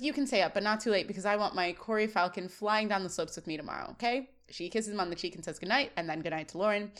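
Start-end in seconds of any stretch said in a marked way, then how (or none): none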